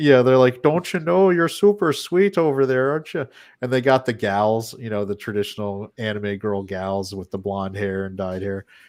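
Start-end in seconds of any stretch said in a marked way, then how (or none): 0.6-3.3 put-on Wisconsin accent, higher pitched. Describing an anime's English dub, imitating its girls in a Wisconsin-style accent. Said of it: "they make all the girls there like basically have Wisconsin style accents".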